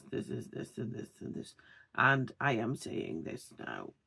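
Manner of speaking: breathy, lifeless half-whisper, no energy or expression. Demonstrating a common speaking mistake, in a flat monotone voice. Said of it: "speaking in a monotone voice. So somebody who speaks like this".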